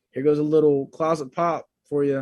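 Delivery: ordinary delivery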